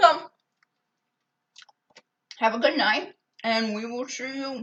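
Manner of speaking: talking with mouth full. Ending a cooking video after tasting the french toast: talking with mouth full. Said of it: "I'm eating".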